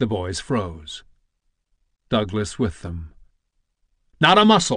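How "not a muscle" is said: full-voiced, high, loud yelled shout. Narrator reads John calling to the frozen boys during their game, shouted. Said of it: "shouted John".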